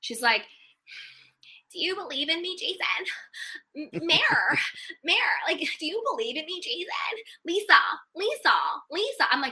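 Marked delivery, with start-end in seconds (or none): 1.7-9.2 desperate, needy, grating voice, pitched up high. Mocking Whitney's pleading lines to Jason and Lisa: grating Whitney impression. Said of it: "Whitney's voice, to me, is like nails on a chalkboard".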